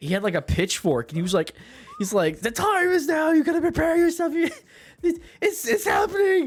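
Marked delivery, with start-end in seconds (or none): 2.4-6.5 very high, unhinged, frantic breakdown rant. Retelling a video of a man having a breakdown: imitating a man having a breakdown. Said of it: "this guy just having a fucking breakdown".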